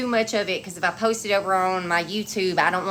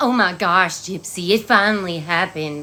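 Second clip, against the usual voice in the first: mock sneering, slow, gushy excitement; 4 dB louder than usual. Mocking how others make the letter sound: mocking gushing imitation. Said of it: "The way they trying to make this sound".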